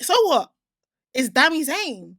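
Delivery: very loud, bold, swooping swaggering chest-out delivery. Answering another speaker who named someone else: said with chest. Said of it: "Said it with chest and everything".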